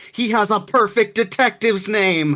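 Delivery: very high, drawn-out yell, sounding distant. Retelling how a mom yelled from across the house: imitating someone yelling. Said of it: "the other side of the house yelled".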